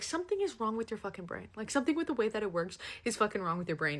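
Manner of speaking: plain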